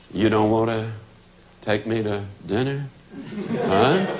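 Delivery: very low, hushed voice. Speaker shows an audience how to answer a refusal, in a lowered voice. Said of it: "You just lower your voice and say".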